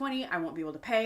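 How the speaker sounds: acted panicked meltdown. Recounting watching a taxi fare climb toward twenty, retelling a panicked meltdown. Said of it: "having a freaking meltdown".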